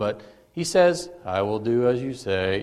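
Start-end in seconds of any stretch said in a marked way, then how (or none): 1.2-2.6 low, hushed, mopey, reluctant, barely willing. Retelling Peter answering Jesus, in an Eeyore voice. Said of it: "talking in this Eeyore voice".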